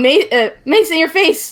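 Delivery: full-on stumbling yelling, high and loud. Voicing a character running out swinging a mace: yelling. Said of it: "just yelling".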